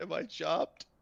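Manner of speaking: almost teary, on the verge of tears. Asking another character if they are finished, almost teary-eyed. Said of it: "almost teary-eyed".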